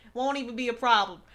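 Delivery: attempted Bronx accent. Streamer boasting he can hold an accent, trying out an attempted Bronx accent. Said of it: "I'm gonna talk in a Bronx accent".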